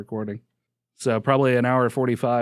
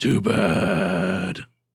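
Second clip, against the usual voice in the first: put-on gravelly voice, lower; 5 semitones lower than usual. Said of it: "to get that gravelly voice".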